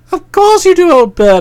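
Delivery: calming, reassuring tone. Narrator reads the narrator's answer to a man's question, soothing. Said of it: "I said soothingly".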